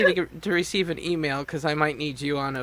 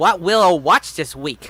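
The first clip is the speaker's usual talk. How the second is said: put-on cartoon voice with W sounds, louder; 7 dB louder than usual. Showing another speaker how to say the line: Elmer Fudd voice. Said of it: "you gotta do more like Elmer Fudd".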